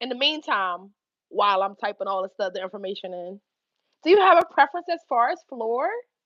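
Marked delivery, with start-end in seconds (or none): 4.0-5.9 sarcastic, overly polite, mock-courteous tone. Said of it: "But I'm being sarcastic".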